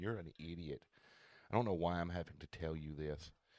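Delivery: put-on patronising, superior, condescending know-it-all voice. Imitating a smart lady from a tv show, off camera: imitating a condescending know-it-all. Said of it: "in a voice that just made you feel like".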